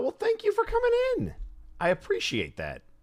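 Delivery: voice jumping way up. Live on stream, thanking a newcomer for coming in, voice jumping way up. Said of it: "my voice just went up 12 octaves".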